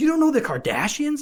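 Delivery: very high, loud blurted outburst. Retelling a classmate's reaction in class: imitating someone saying it loudly. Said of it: "she just loudly goes".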